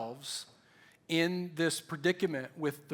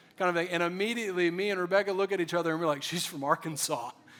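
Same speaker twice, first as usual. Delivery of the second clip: ordinary talk, nothing marked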